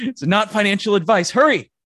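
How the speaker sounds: mock hype, high, loud, fake-urgent pitch.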